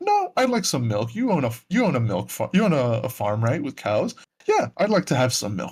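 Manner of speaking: relaxed, easygoing, very chill, breezy, swooping sing-song delivery. Retelling a film's opening scene: very chill Christoph Waltz impression. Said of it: "very chill, very kinda like".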